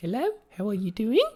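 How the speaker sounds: put-on Australian accent, pitched very high. Speaker describing people whose accent annoyed them, imitating the local accent. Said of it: "the accents got kind of annoying".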